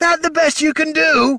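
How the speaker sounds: very high, snarled delivery. Jenner snarls back at a kobold who made a rude gesture, snarled back. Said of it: "Jenner snarled back".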